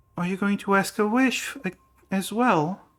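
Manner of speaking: gentle, very high little voice. Storyteller voices a small child with a tail speaking to the player, in a soft voice. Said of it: "a soft voice that just asks".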